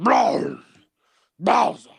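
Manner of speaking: rasping, creaky monster voice. Showing a friend an impression of Bowser: Bowser voice. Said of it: "I'm good at Bowser".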